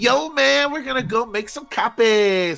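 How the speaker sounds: drawn-out cadence, every word stretched, pitched high. Imitating a movie character's line the speaker hated: Pauly Shore cadence. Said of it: "he has this cadence".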